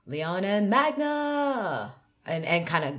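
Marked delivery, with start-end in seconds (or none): 0.1-1.9 pitch jumps up high on the word magna. Announcing two names to get the crowd going, high pitch on magna. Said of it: "the last part of the names is really high to get the crowd going crazy".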